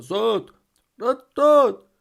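frantic, shrill bawling, very loud. Reading a story, the fish calls after the boy drifting with the current; yelling. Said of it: "зарепетував він".

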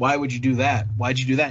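mock condescending tone. Speaker imitates outsiders who question choices after the fact: mock-condescending question. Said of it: "very like condescendingly like".

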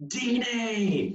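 acted-out, very high-pitched, screaming commentator voice. Retelling a soccer goal call: imitating a commentator screaming. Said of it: "the commentator just screams".

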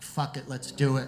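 normal talking voice

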